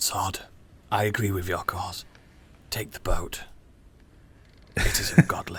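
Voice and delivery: breathy, quiet whisper. Voicing a character who whispers to Sod in the scene: whispering. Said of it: "he whispers to Sod".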